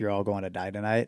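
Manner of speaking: ordinary talk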